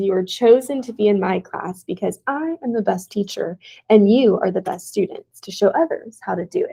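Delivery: normal talking voice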